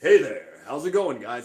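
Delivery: loud, resonant announcer-style voice. Explaining how talking a lot changes your voice, in a weird announcer voice. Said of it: "you get this weird announcer voice".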